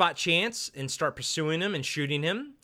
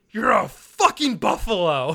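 put-on furious snarl, louder, slower; 5 semitones higher, 8 dB louder than usual. Retelling a film character insulting a hunter goon, then walking away; mock-furious snarl. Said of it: "he's so pissed off".

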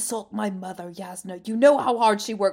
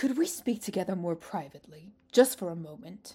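low, soft, hushed character voice; 4 semitones lower, 7 dB quieter than usual. Reading a scene aloud with character voices: Amaram voice. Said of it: "That's the Amaram voice".

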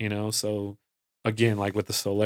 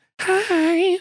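very high, loud, squeaky pop-singer voice. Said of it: "That's my [name] voice".

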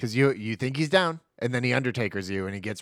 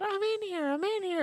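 put-on very high, slow little-girl voice; 3 dB quieter than usual. Retelling a movie scene where the leprechaun fakes a voice: imitating a little girl's voice. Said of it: "He used a little girl's voice".

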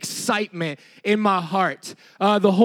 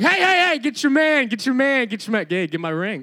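mock exasperated, frustrated, repeated calling; 4 semitones higher than usual. Retelling own calls to players during the game: retelling own frustrated calls. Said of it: "the frustration".

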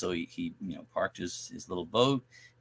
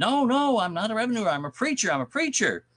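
very high, shrill, loud shout, protesting; 6 dB louder than usual. Telling a story about a preacher facing a moonshiner, retelling a preacher shouting. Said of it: "he starts shouting".

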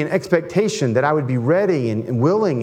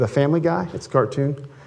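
ordinary talk

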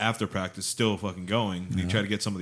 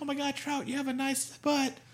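very high-pitched, loud, yelled catcall. Retelling how a woman in the stands yelled at a player: imitating a woman yelling. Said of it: "some chick was yelling at Trout".

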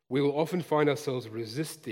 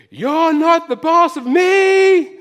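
put-on shrill, loud, slow childlike yell, me stretched long; 17 dB louder than usual. Retelling a child shouting from his bedroom: imitating a child yelling at the top of his voice. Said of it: "I could still hear him yelling".

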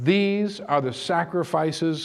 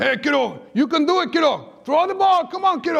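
put-on Spanish accent, much higher, faster; 12 semitones higher, 4 dB louder than usual.

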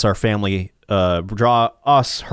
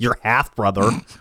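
mimicking an attitude-filled tone. Speaker repeats how a woman answered them: imitating her attitude. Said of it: "She said it with such attitude".

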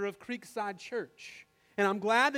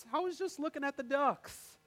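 put-on quick, sweet little three-year-old toddler voice; 4 semitones higher, 4 dB quieter than usual. Retelling a toddler's answer when asked what he was doing, sweet toddler voice. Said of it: "with the most sweet toddler 3-year-old voice".

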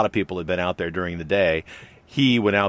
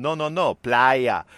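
terrible put-on Puerto Rican accent, much higher; 5 semitones higher than usual. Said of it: "I'm doing a terrible Puerto Rican accent".

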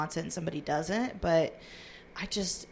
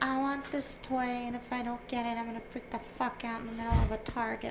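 put-on high-pitched, childish little kid voice; 6 semitones higher than usual. Talking about paying for a child, the speaker acts out the kid: kid voice. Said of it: "it's kid's me voice".

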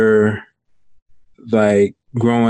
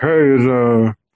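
slow, muffled voice. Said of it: "he had, like, a really muffled voice".

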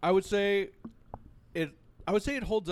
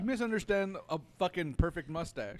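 plain

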